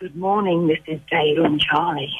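sultry, seductive, low bedroom voice. Asked to repeat the greeting again, the guest says it in a sexy bedroom voice. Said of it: "can you say it in a sexy bedroom voice".

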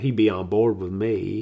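light, slow country drawl. Teasing the other speaker by repeating their line: imitating a country accent. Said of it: "a little country accent there when you described it".

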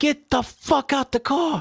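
very high, stretched-out, drawn-out yell. Retelling a traffic stop, quoting the cop, imitating a cop yelling. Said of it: "the cop is yelling".

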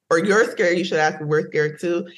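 ordinary talk

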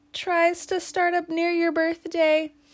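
stress on tries, pushed high and loud. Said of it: "Emphasize the word tries".

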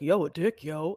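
put-on mystery voice, dropped down deep. Retelling a surprising remark from an unknown speaker: imitating a low voice. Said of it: "like, a low voice".

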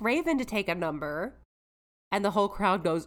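plain

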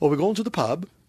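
Scouse Liverpool lilt with the ending lifting up. Showing how liverpool people end sentences: imitating liverpool accent, rising endings. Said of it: "they end their sentences with".

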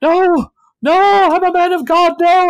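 panicked, terrified scream, very high and very slow. Voicing a man who falls and retches, screaming in terror. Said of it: "and screams".

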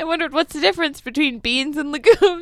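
laughing while talking. Explaining a lifelong question to another speaker, laughing while talking. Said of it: "I can't stop laughing".

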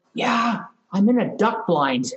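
put-on whispering voice. Retelling a caller's reply from a duck blind: imitating someone whispering. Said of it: "kind of whispering".

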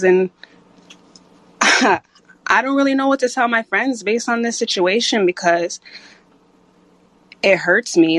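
audibly hurt, emotional voice. Speaker confiding about worries for friends, with hurt in the voice. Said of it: "you can kind of hear it in my voice".

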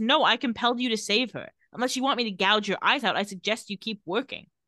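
ordinary talk

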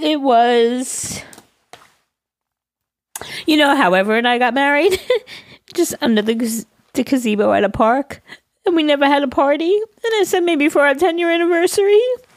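talking through tears. Recalling a wedding party that never happened, crying while talking. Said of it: "that's why I'm crying".

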